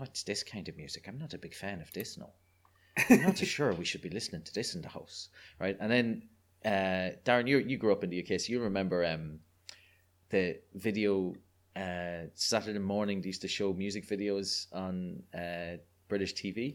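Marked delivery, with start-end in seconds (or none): 0.0-5.3 wary, doubtful, disapproving parental tone. Retelling a dad objecting to loud music played at home: imitating a disapproving dad. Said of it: "my dad going".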